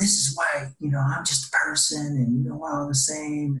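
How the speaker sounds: play-acted mild insistent yelling. Retelling a dinner argument, mom's reply to a cousin: imitating someone yelling. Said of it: "She was yelling".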